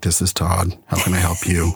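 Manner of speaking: flat, lifeless, dull, droning, level monotone. Recalling how his old sales greeting sounded, flat monotone voice. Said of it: "because of my monotone voice, ... my voice was like".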